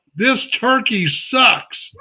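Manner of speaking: put-on yell, called out high and light. Retelling what someone shouted from a parade truck: imitating someone yelling. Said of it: "he yells out".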